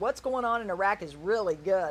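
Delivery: plain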